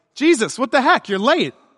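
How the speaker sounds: acted-out, mouthy, sassy delivery full of attitude. Imagining Martha going out to Jesus, voicing Martha with put-on attitude. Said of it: "I picture her with a bit of an attitude".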